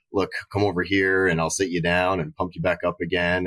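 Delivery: ordinary delivery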